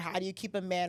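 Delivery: ordinary talk, nothing marked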